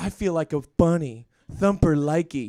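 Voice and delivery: mock whisper, as if close to the ear. Speaker acts out what he says in your ear: mock whisper. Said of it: "He whispers in your ear".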